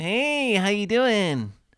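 very high, slow, stretched-out puppet voice. Correcting another speaker's impression with a Big Bird voice. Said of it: "Big Bird's like".

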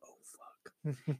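real soft, quiet. Retelling what a girl in class said under her breath, real soft. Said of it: "real soft".

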